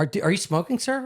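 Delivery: put-on little girl voice, halting, tripping over the word are.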